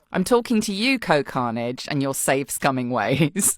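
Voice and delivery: plain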